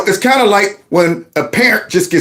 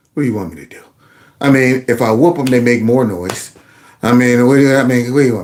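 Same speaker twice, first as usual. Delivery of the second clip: put-on defeated, worn-down, broken, given-up tone; 7 semitones lower than usual. Retelling a friend's answer to people in church: imitating a defeated friend. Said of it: "She's broken".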